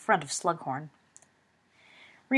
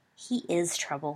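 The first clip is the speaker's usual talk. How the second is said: plain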